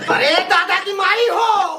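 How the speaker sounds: loud angry shouting. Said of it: "आराम से, आराम से".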